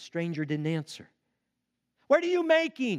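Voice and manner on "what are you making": louder, high-pitched yelling. A cave person calls to a silent stranger in the dark; shouting even louder. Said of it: "one shouted even louder".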